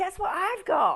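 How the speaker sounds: very high, very loud, thrilled, excited squeal. Retelling what a little granddaughter said: imitating Alice sounding really excited. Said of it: "Like, really excited".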